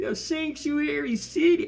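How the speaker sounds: very high, complaining, whiny voice. Imitating someone heard whining in a video, mock whine. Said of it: "you just hear this whine".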